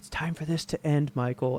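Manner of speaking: very quiet, soft voice. Recapping a movie scene where Laurie confronts Michael: quoting Laurie very quietly. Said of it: "Laurie just very quietly is like".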